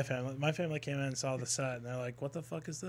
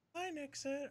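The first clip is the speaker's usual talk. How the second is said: put-on text-to-speech robot voice, higher and quieter; 13 semitones higher, 6 dB quieter than usual. Retelling a donation message read out on a stream: imitating donation robot voice. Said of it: "it does the robot voice".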